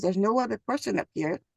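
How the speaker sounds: ordinary delivery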